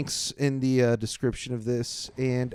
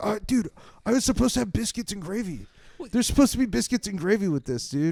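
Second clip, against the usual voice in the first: mock panicky, high-pitched, panicked voice; 8 semitones higher than usual. Retelling a friend's complaint at a restaurant, imitating Brett panicking. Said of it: "he panicked".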